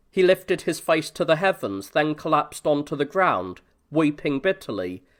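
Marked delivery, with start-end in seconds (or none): none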